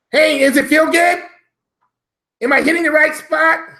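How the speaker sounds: squeaky, very high nerd voice. Contrasting with a deep voice, imagining a nerd in bed, in a nerdy voice. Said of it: "Now imagine the nerd in bed".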